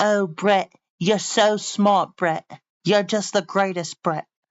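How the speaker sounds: put-on high, gentle British woman's voice. Teasing someone about how their ai talks, in a soft-spoken british woman voice. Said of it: "You have it sound like a soft-spoken lady".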